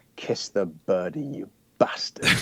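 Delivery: put-on cruel, hushed whisper with northern accent creeping in. Retelling a scene where Bond prepares to shoot Sanchez: imitating Timothy Dalton whispering. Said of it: "you hear him whisper".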